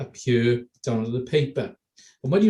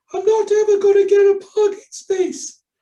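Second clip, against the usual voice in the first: ridiculous voice, very high and loud; 7 dB louder than usual. Showing how to read your worries to yourself in a ridiculous voice. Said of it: "in a ridiculous voice, an absurd voice".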